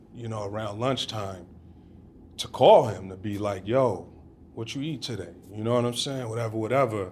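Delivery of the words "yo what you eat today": usual speaking voice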